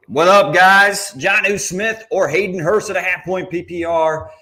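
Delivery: very high broadcast-announcer delivery. Stream host reads out a super chatter's question to Bucky, announcer voice. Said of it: "Doing my announcer voice".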